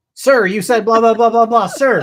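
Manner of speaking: very loud, high-pitched, military drill-style shouted reply. Imitating a woman answering an officer like a recruit in boot camp. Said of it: "She sounds like she's in boot camp".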